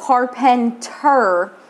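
Carpenter with heavy stress on the -ter syllable. Retelling correcting people who misspell the last name: retelling own stress on ter in carpenter. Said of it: "emphasize the last, like, ter of my name".

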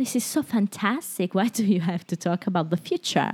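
put-on, passable English accent. Retelling a scene, quoting a character's words: imitating an English accent. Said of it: "imitando l'accento inglese".

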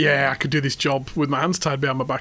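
plain

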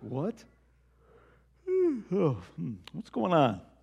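put-on drowsy, freshly woken, sleepy voice. Retelling the disciples waking Jesus in the boat: just woken Jesus. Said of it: "I could just see him like this".

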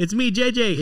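mock, very high, shouted scream projected far. Retelling how a friend called out a car window: imitating someone screaming. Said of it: "George had to scream out the other window".

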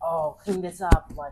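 put-on rude tone. Retelling what the roommate said: imitating a rude tone. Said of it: "like in a rude tone".

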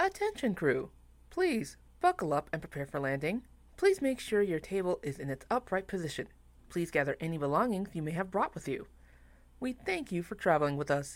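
loud, low flight attendant PA announcer voice. Pretending to be a flight attendant before a bumpy landing, in announcement voice. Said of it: "why is he pretending to be a flight attendant".

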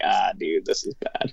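low, hushed, dismayed aside. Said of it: "and I was just like".

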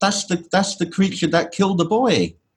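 put-on shout. Telling a story where a mother shouts to everyone about the Hulk, retelling her shout. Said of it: "she shouts out".

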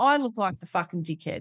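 ordinary delivery

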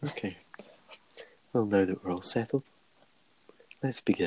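calm, soft-spoken, hushed ASMR voice. Starting the podcast after another speaker calls for a calm, soft-spoken episode: ASMR voice.

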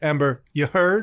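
short, little pause after the name. Showing how to say the phrase, short pause after amber. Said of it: "There's a little pause".

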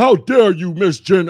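put-on deep booming voice, very loud. Acting out someone's reply to being called sir, imitating a very deep voice.

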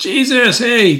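high-pitched yell, loud and carrying.

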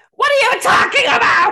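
really high-pitched, very loud shrieking yell. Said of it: "really high-pitched yell".

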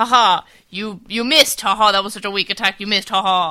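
mocking clichéd villain gloat. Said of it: "in the dub, it's like, word for word".

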